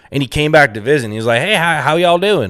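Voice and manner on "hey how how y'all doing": put-on pitched-up Southern accent. Retelling a middle-school friend visiting after moving to Florida: imitating his new Southern accent. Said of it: "he never had a Southern accent".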